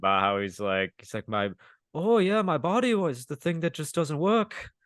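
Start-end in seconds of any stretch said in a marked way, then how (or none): 1.3-4.6 put-on Irish-sounding voice, higher pitch. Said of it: "your [name] is Irish".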